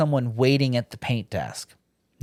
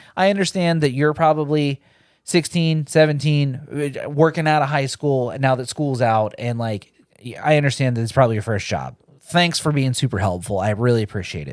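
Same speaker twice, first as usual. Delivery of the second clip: normal talking voice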